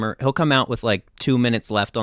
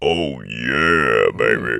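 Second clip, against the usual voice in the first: very low, smooth late-night jazz DJ voice; 10 semitones lower than usual. Showing an inhale-talking voice: really deep smooth jazz radio guy voice. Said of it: "a really deep, like, uh, smooth jazz, like, radio guy".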